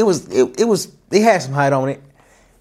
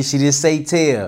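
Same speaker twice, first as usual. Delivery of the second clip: normal talking voice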